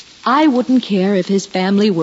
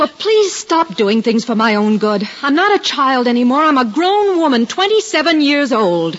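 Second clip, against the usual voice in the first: raised, pitched-up, firm voice; 5 semitones higher than usual. A grown daughter pushes back at her mother, with a raised voice. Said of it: "Must you raise your voice?".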